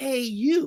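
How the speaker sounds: carrying stage whisper. Retelling a voice heard calling out at the hospital, imitating a loud whisper. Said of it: "It was like a loud whisper".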